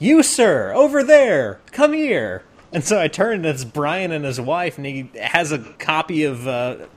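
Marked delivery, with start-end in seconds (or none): 0.0-2.4 very high, jolly, swooping, booming voice. Retelling being called over across the floor by Brian: jolly voice as Brian. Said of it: "the most jolly voice I have ever heard".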